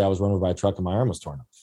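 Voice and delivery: flat, matter-of-fact deadpan, low and fast. Retelling how they answered people who asked about their arm, retelling a deadpan answer. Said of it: "I'd look at them deadpan in the face and say".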